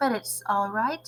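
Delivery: plain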